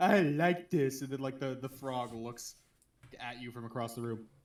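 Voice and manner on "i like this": big cartoon cat character voice. Retelling how a character talks, in a Big the Cat voice. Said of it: "still do the Big the cat voice".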